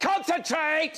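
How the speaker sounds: mock, very high, sharp one-word shout. Retelling their father snapping after the car engine stalled: imitating dad's sharp shout. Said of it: "Which is such a calming thing to say".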